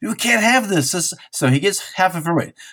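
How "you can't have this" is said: high-pitched scream. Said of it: "he screams".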